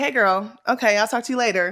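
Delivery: mock offhand, breezy, dismissive tone. Retelling how one woman greeted another: imitating someone being dismissive. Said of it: "It was very dismissive".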